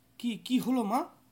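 flustered, hurried. The narrator, hearing his mother suddenly scream, asks her, flustered and hurried. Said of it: "আমি ব্যস্ত হয়ে বললুম".

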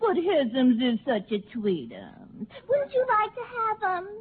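put-on gushing, high, sing-song baby talk. A woman in a drama speaks to a man, baby talk. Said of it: "Dames that talk baby talk".

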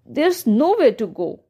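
usual speaking voice

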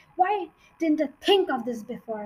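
ordinary delivery

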